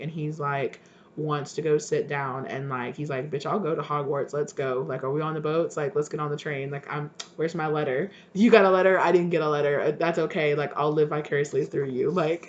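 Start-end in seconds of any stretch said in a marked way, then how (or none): none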